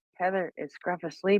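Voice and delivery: soft, hushed stage half-whisper. Retelling how Mockers asked if Scruff was asleep: imitating Mockers half-whispering. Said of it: "we do it in this whispering voice".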